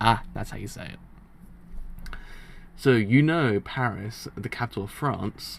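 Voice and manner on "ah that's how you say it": slow, breathy, secretive whisper. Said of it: "I'm like".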